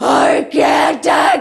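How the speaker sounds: guttural howl of pain.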